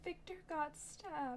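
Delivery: very faint, barely audible, high whisper. Answering a worried speaker who cannot hear: whispering too quietly. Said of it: "you're, like, whispering in a way that I cannot hear".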